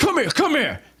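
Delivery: very high, yelled call. Voicing a character calling after departing players: yelling. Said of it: "Tyvor yelling".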